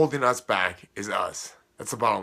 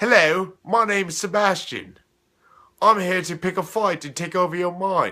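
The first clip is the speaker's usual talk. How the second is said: put-on pitched-up small British boy voice; 7 semitones higher, 4 dB louder than usual. Speaker voicing the nickname they give their negative beliefs: little British schoolboy voice. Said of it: "reminds me of a little British schoolboy that's very unintimidating".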